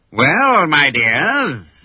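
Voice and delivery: boastful, gloating pirate crow, "dears" drawn out. Captain Hook giving the captive children a terrible choice, crowing. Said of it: "he crowed".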